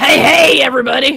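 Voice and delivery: loud New Jersey meth clown accent. Saying a line in a requested manner: meth clown accent. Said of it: "I guess I have to say it a certain way".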